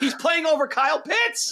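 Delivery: shrill, high, heated shouting. Arguing on a podcast that the team lacks offensive players: yelling. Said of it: "now I'm yelling on a podcast".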